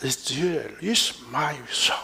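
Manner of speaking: very slow, whispered moan under the breath.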